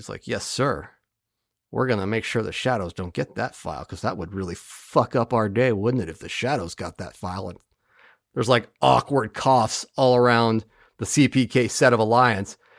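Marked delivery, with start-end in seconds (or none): 0.3-7.5 low, soft, very serious voice. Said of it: "Babyface Cranston is very serious".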